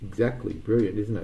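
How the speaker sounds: ordinary delivery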